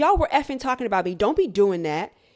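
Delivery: put-on aggressive girl voice. Speaker retelling her confronting a group who were talking, imitating an aggressive girl. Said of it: "the way that she was trying to get his attention was very aggressive".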